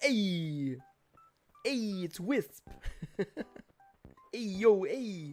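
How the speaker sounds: slow, loud, cool swagger, every "hey" stretched. Playing a game, imagining a character called Wisp talking, doing a Fonzie-style voice. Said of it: "kind of like a Fonzie kind of uh, vibe".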